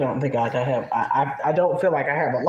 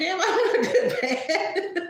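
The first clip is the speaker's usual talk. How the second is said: slow laughing through the words, very high. Admitting personal flaws, then reassuring oneself: laughing while talking. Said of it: "I'm laughing".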